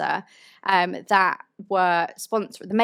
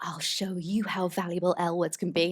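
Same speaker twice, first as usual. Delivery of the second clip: bad, terrible, put-on fake American accent; 5 dB quieter than usual. Quoting a line a woman says in a film: bad american accent. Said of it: "That was my terrible American accent".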